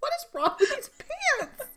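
very high, rushed, frantic, swooping panicked voice. Acting out Ross struggling with his pants, hands open: frantic Ross impression. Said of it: "'Cause he's so frantic".

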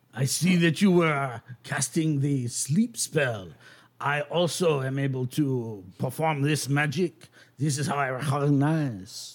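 put-on French accent. In an actual-play game, voicing a wizard addressing a fellow spellcaster, with a put-on french accent. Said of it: "I'm sure all of our French listeners will love my accent. / he goes over and he like closes the door, / I'm sure all of our French listeners will love my accent".

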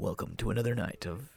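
very soft, hushed, dark movie trailer announcer voice. Describing someone who had a movie trailer voice, imitating a dark trailer voice. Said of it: "the movie trailer guy who do the dark voice".

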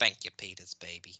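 gentle smooth cartoon voice. Joking about how cartoon characters say a word, the speaker does the Cleveland voice. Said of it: "I can do the Cleveland voice".

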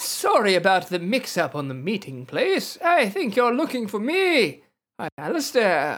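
put-on aged, old wizard character voice. Game master voices someone who taps the player's shoulder: old wizard voice. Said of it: "I like your old wizard voice".

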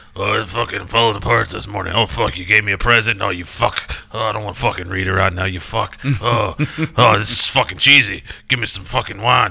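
poor put-on complaining voice. Imitating another speaker coming in grumbling: imitating another speaker complaining. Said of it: "That's a horrible impression".

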